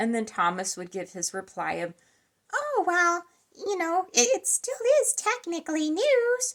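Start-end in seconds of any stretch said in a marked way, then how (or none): 2.5-6.5 very high, light and gentle voice. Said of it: "with his [name] voice, uh, or Tickle Me Elmo voice".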